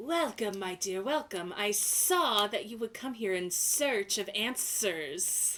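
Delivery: slithering, snaky serpent voice. A serpent greets a visitor who approaches, in a snaky snake voice. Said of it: "like think of like a snake, snaky voice".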